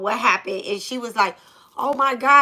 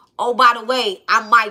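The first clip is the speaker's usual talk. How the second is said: put-on voice of a shaken-up little boy. Telling a story, a speaker quotes a little boy introducing himself, imitating shaken-up Michael. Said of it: "because he still shook up a little bit".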